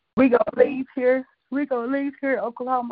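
yawning while speaking. Explaining travel plans for the summer, talking through a yawn. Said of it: "I'm sorry. I'm yawning".

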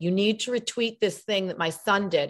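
ordinary delivery

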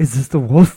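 loud, sudden outburst. Retelling what a friend blurted in a quiet theater: imitating a loud question. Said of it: "Really loud".

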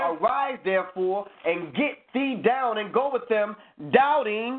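ordinary talk, nothing marked

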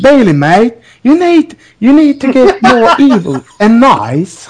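put-on Australian accent. Retelling what Emma said to Bayley, in an Australian accent as Emma. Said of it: "how can I do this in Australian?".

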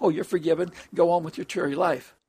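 ordinary delivery

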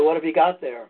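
normal talking voice

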